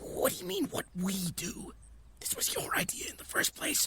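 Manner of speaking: harsh, hushed whisper. Character arguing with a companion while hiding behind trees, harsh whisper. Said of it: "It's like a whisper, but it's a harsh whisper".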